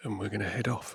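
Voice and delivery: speaking very quietly. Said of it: "I'm speaking very quietly".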